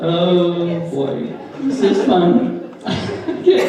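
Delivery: high voice, laughing with delight throughout.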